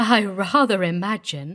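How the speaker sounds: ordinary delivery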